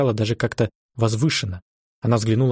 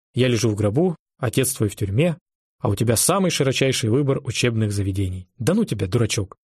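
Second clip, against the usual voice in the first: plain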